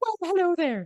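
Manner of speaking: very high-pitched little gnome voice. Voicing a gnome heard through purple smoke behind a counter, high-pitched gnome voice. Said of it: "you hear that high pitched so- voice say".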